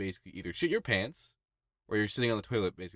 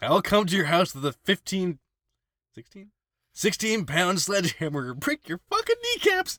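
much higher pitched voice; 10 semitones higher, 6 dB louder than usual. Speaker makes a threat, voice going higher. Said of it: "my next voice went higher there".

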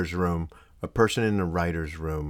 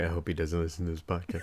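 ordinary talk, nothing marked

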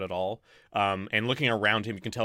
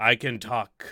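booming ape voice, slower; 3 dB louder than usual. Narrating an ape approaching the group, big booming ape voice. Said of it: "A big booming voice comes from the ape".

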